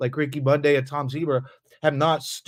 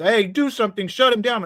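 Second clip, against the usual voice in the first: put-on high, sobbing, pleading, crying voice; 8 semitones higher than usual. Retelling screen grabs of someone crying about a stream: imitating Miss Mandy crying. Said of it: "she's crying like".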